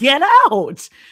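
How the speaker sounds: exasperated shout. Retelling own reaction to a mom staying in a burning car: imitating own frustrated yell. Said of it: "at first I was frustrated with her".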